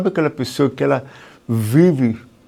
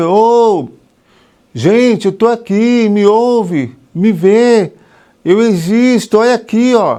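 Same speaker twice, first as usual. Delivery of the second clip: put-on high, drawn-out child voice shouting; 7 semitones higher, 6 dB louder than usual. Acting out a child who is not seen: imitating a child shouting. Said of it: "A criança, ela fica gritando".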